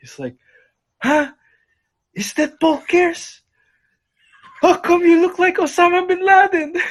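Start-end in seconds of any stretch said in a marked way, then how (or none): 1.0-6.7 very high, shrill, loud calling voice. Retelling how he spotted you from across the field, do Tito Lito's uncle voice. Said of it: "That uncle voice is so spot on".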